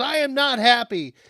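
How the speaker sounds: put-on very high, loud, slow, drawn-out yell. Retelling how a stranger shouted at them after a car accident, acting out the angry words as an impression of yelling. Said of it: "yelling at me like".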